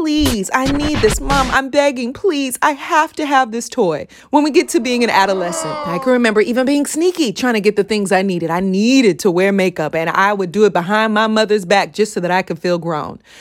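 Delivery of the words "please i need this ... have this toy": put-on childish begging voice, pleading over and over. Retelling asking mom for a toy as a child: imitating a child begging. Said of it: "Asking over and over".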